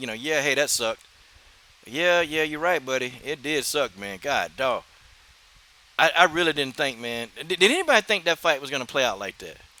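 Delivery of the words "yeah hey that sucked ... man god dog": put-on offhand, dismissive tone, quieter. Retelling how he tried to play it off: imitating someone playing it off. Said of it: "he tried to play it off and say".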